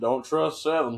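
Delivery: put-on speaking in an elderly man's voice. Repeating the old man's warning from the elevator: imitating the old man. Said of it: "bro's like".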